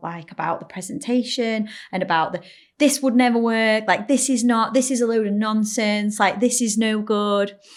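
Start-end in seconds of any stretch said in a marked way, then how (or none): 2.8-7.6 put-on drunken shouting, higher and louder. Retelling how a drunk audience member heckled a presentation: imitating a drunk heckler shouting. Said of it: "she's literally shouting out".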